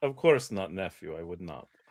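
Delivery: chuckling, laughing delivery. Voicing the uncle answering his nephew: laughing while answering as the uncle. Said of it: "He laughs and it's like".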